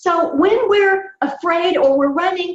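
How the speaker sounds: voice shooting way up to very high pitch. Describing how fear changes the voice, speaking at a much higher pitch. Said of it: "did you hear what happened to my pitch? It went way up higher".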